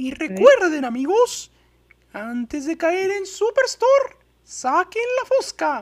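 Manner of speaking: very high voice, pitch swooping around. Carrying the bit on into Spanish for friends, Mickey Mouse voice. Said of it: "O también puedo hacerlo sea, en sale. español".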